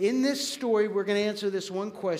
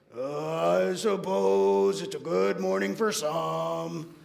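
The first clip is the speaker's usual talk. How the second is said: very slow, creaky, gloomy, with "I" dragged out; 2 semitones lower than usual. Retelling a cartoon scene, answering a cheerful greeting: imitating Eeyore's gloomy voice. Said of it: "And Eeyore, with his head down, goes".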